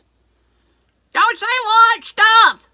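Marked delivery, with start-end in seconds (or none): 1.1-2.5 much higher, much louder yelling voice. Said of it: "wives out there yelling at your husbands".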